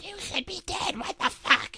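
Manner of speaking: very high-pitched voice. Retelling what a creepy tape sounded like, Elmo voice. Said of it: "is what Elmo sounded like".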